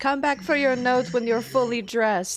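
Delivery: loud voice calling out from a distance. Recounting a scene, one character calls after another on the stairs, shouting. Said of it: "Tess kind of shouts".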